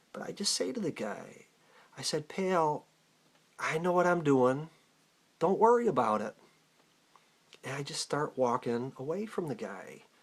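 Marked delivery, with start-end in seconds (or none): 2.3-6.4 put-on, slightly raised voice to carry. Retelling speaking to a driver through a closed window: retelling a slightly raised voice. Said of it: "so I gotta raise my voice a little bit".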